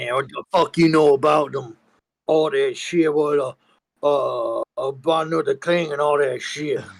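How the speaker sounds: put-on gruff, angry voice. Joining the bit of a fake angry radio caller with a put-on gruff angry caller voice. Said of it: "you gotta have that gruff in your voice".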